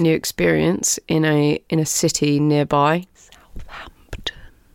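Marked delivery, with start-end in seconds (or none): 3.1-4.3 very quiet, hushed whisper under the breath. Naming a nearby city where something happened: whispering. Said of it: "Why do you have to whisper Southampton?".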